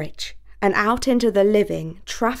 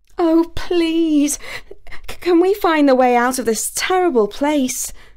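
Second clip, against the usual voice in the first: frightened, pleading voice pitched up high; 7 semitones higher, 3 dB louder than usual. After Basil swipes at a shrieking creature, she almost falls from her saddle, pleading. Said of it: "she pleaded".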